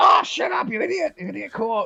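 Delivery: very high, squeaky little kobold voice. Narrating a scene, voicing two kobolds hidden under a cloak, kobold voice. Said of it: "the other two just go".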